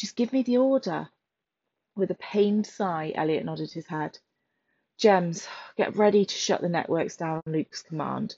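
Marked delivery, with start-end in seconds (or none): 0.0-1.1 tense, urgent, much higher. Gemma presses Elliot for the order as a countdown runs, taut with urgency. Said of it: "her voice taut with urgency".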